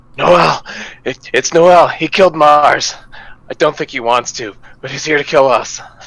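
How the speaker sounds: breathless panting. A tabletop player speaks in character to the party, panting. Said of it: "of like panting and just like".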